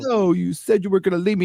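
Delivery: put-on very high, mad, indignant outburst. Retelling a show scene where little Leia protests being left: imitating Leia mad and indignant. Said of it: "she got all mad and indignant".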